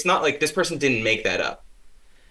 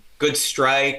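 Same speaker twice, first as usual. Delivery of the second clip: ordinary talk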